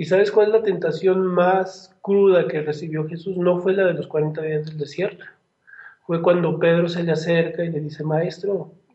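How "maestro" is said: put-on pleading, suffering voice like a child's. Retelling how Peter tempts the Master: Peter as a suffering child. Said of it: "así con una voz como de, de niño sufriendo por su papá".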